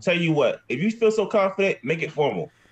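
heated, confrontational tone. Arguing with another player during a werewolf game, raised voice. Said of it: "Why are you raising your voice".

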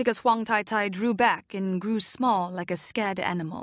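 ordinary delivery, nothing marked

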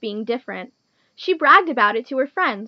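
plain

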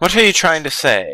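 put-on British accent. Reading a character's line aloud during the game: British accent. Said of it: "Why did I just give him a British accent?".

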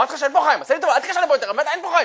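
very high furious outburst. A speaker acting out an angry phone call as the second degree of anger, mock-angry shouting. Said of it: "אתם כרגע צפיתם בדרגה השנייה של כעס, כיצד האדם כבר התפרץ, הרים את קולו".

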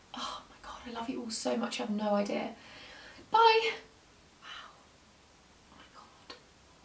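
emotional, breathy near-whisper. Saying goodbye to viewers at the end of a video, getting emotional. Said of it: "I can't stop getting emotional".

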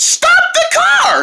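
very high, shrill shouted yell. Showing listeners what to yell into the speaker at a speeding driver: yelling. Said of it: "put your mouth on the speaker and yell with us".

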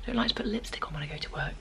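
soft, unvoiced whisper. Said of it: "I'm trying to be quiet 'cause people are still sleeping".

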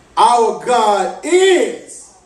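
heavy stress leaning into the word "is". Preacher leading the congregation in a line: stress on is. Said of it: "emphasis on is".

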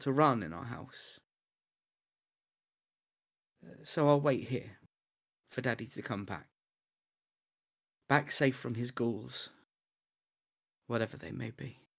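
eerie, creepy voice. A child in a horror story waits at home for daddy, unsettling voice. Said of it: "that unsettling voice that you were doing".

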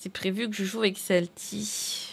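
ordinary delivery

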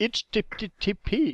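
put-on slow, loud English accent. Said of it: "avec ton accent anglais".

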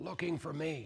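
put-on very quiet, hushed, high little-boy half-whisper. Telling a joke, voicing a little boy on the phone: imitating a half-whispering little boy. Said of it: "still whispering".

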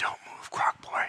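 hushed, breathy whisper, very close. Voicing a character who lands behind a player and threatens him: whispering. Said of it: "she whispers in your ear".

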